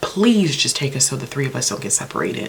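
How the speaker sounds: ordinary delivery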